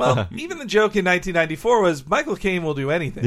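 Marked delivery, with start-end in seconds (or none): none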